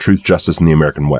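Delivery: ordinary talk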